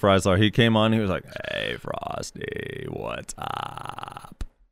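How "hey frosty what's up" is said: whispered, very slow, drawn out, hushed and breathy. Retelling a friend joining the call at four AM: imitating Freisler talking weird. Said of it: "Freisler, why are you talking like that?".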